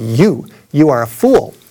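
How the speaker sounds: measured, slow, drawn-out, proclaiming delivery. Recounting a man with a loudspeaker answering his shout, imitating a booming voice. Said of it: "he said with a booming voice".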